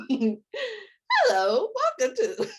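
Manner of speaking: high, cracking robot voice. Speaker says her voice cracks, then shows a robot cracking: cracking robot voice. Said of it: "you want to hear a robot cracking?".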